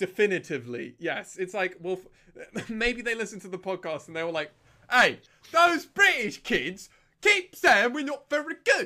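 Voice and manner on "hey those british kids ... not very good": odd put-on Cockney accent, shrill, very high, loud. Speaker imagines rival players reacting to the podcast, weird Cockney accent. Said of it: "giving them like a weird Cockney".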